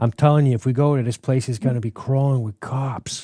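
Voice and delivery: put-on Boston accent. Playing a character in a group role-play, in a Departed-style Boston accent. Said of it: "I'm going to do a Departed accent the whole time".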